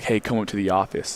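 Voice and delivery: put-on grave, serious voice. Retelling a callback summoning the speaker to the office, imitating the caller's serious voice. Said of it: "they did like in a serious voice".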